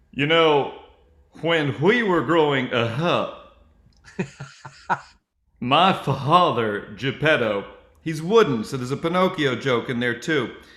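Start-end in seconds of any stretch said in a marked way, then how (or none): 0.2-7.7 very slow, drawn-out Southern drawl. Showing how to do an Al Gore impression: Al Gore impression with Southern drawl. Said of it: "in the middle of my Al Gore impression".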